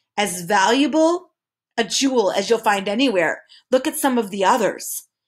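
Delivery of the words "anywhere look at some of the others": ordinary delivery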